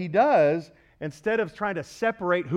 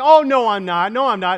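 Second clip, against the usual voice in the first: mock-defensive, higher pitch, louder, slower; 4 semitones higher, 10 dB louder than usual. Husband retelling teasing his wife, imitating her getting all defensive. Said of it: "And she got all defensive".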